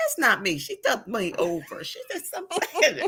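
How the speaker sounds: high, laughing mock accusing tone. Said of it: "I was like".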